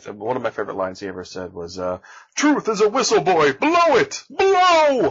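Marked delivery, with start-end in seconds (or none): 2.4-5.1 very loud, high, swooping, slow, "blow" stretched out. Quoting a favorite line from the cartoon hero, The Tick voice. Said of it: "I wish I could do a Tick voice. I'll try".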